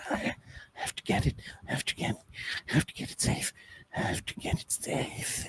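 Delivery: hushed, whispered, muttering ghost voice. Voicing a spectral figure muttering to itself: ghostly whisper voice. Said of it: "whisper voice that does come to you".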